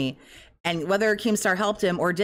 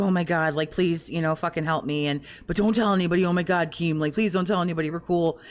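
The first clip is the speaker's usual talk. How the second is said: put-on begging voice. Imagining what Phil said to Keemstar, imitating Phil pleading. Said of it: "was like".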